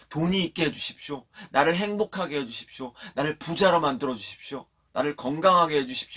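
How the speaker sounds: high-pitched crying out.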